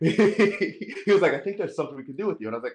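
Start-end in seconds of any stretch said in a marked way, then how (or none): 1.3-2.5 put-on British accent. Retelling what the man at the audition said: imitating Malcolm's British accent. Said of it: "I don't know if that accent's coming through".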